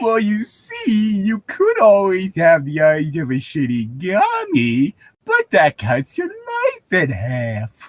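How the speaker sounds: mournful, helium-high cartoon dog drawl, swooping. Voicing a character in a group scene, in a Droopy-on-helium voice. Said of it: "What is this voice?".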